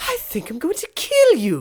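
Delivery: very high, loud, sing-song cartoon voice. Trying to recall how a cartoon voice goes, Stewie voice. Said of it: "Stewie, how does it go?".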